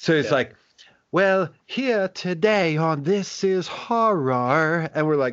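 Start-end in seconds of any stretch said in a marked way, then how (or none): 1.1-4.9 high, slow, eerie horror-host drawl, "horror" drawn out. Imitate a British fella hosting his show, talking like a horror host, in a Crypt Keeper voice. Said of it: "He talks like he is the crypt keeper host of some horror show".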